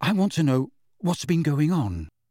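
ordinary delivery, nothing marked

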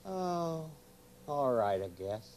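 not too happy. In a skit, a character answers how he's doing, unhappy. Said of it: "you don't sound too happy".

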